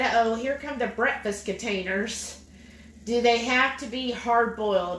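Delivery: normal talking voice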